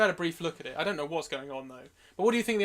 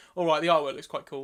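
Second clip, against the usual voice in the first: plain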